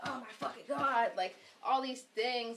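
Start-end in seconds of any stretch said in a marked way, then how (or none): 0.0-1.1 mock raging tantrum, yelled out. Telling of a man throwing a fit and stomping, imitating someone yelling. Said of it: "he's yelling, and he starts stomping".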